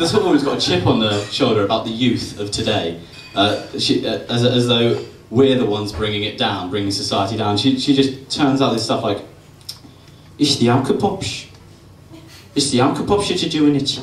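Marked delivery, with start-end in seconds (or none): 10.4-14.0 fake Brummie accent, pitched up. Speaker quoting a woman who complains about today's youth, in a put-on Brummie accent. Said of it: "she hasn't got a Brummie accent".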